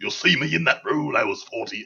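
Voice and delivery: terrible put-on English accent, pitched high and loud. Joking about an actor's real age: terrible English accent as Harry Potter. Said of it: "That's a terrible accent".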